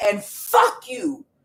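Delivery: mock held-back yell. Repeating a curse someone nearby just yelled, retelling a yell. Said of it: "just like that".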